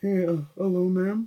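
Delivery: put-on soft, deep manly voice. Imagining who might answer a call on the other end, in a manly man's voice. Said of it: "It could be a manly man's voice on the other end".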